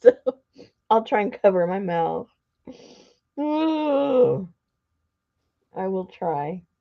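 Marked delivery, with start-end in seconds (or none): 3.4-6.6 very slow words spoken mid-yawn. Speaker apologises for yawning after a long day, speaking through a yawn. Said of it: "I'm already yawning".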